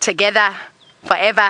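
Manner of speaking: Australian accent. Practicing words from a tutorial on speaking like an australian: australian accent. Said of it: "how to speak like an Australian".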